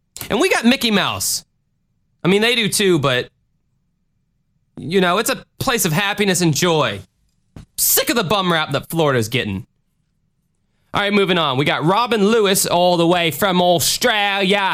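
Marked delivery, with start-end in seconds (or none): 11.6-14.8 put-on butchered Australian accent, higher pitch. Introducing a listener from australia: bad australian accent. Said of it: "I apologize for butchering the accent there".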